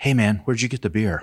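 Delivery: speaking in a whisper. Retelling a dad who leaned over at kids' soccer to ask him something, whispering. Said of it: "leans over to me and whispers".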